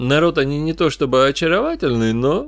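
usual speaking voice

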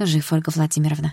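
ordinary delivery

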